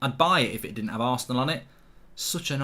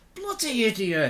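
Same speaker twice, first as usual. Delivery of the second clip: angry, cursing shout at a raised pitch; 10 semitones higher than usual. Spilling water from a cup, shouting at the cup. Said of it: "I'm shouting at the cup".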